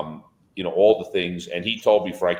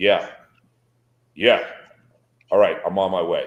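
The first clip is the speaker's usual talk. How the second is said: put-on rough, gruff old grandpa voice. Recalling the grandfather answering a phone call from Jimmy, grandfather's gruff voice. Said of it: "in just his gruff voice".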